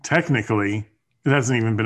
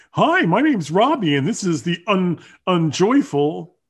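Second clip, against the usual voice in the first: pitched-up, teasing, mocking parody voice; 8 semitones higher than usual. Teasing the co-host about how they sound, imitating Robbie. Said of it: "That's what you sound like".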